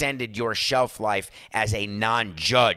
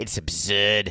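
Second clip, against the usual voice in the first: put-on clumsy, fumbled Boston accent. Talking about Red Sox fans, the speaker does a bad Charles Emerson Winchester impression. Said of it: "That's the worst Boston accent ever".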